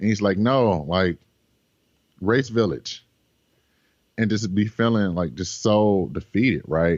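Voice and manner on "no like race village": put-on slow, heavy German accent, laid on thick. Retelling what a man said to you during your race, thick german accent. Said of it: "very thick German accent is like".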